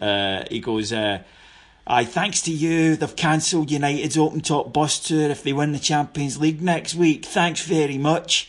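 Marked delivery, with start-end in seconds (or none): 1.8-8.5 acted-out high-pitched shouting. Retelling what a passerby in the street shouted: imitating someone shouting. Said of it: "he shouts into us".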